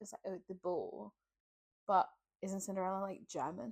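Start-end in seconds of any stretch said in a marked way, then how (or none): 0.3-1.1 soft put-on English accent, "ball" sounding like "bow". Explaining how English people pronounce a word: English accent impression. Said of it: "that's how English people".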